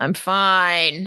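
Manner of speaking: sleepy, drowsy character voice. Voicing a sleepy character who insists he is fine: sleepy character voice. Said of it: "He's just very sleepy".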